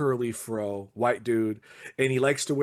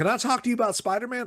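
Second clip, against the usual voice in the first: squeaky, very high, odd weird-guy voice; 10 semitones higher than usual. Telling a story about a weird customer at the store, the speaker imitates a weird comics customer. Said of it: "he talks like this".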